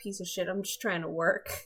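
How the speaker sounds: quiet mutter under the breath, half to oneself. Narrating a game scene, voicing Frank as he mutters under his breath. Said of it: "you just hear Frank mutter under his breath".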